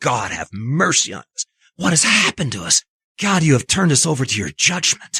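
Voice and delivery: mock, frenzied, crazed, swooping, dramatic reading. Acting out a sinner's prayer to god: dramatic crazed reading. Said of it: "like he's doing a dramatic reading of, of a crazy person".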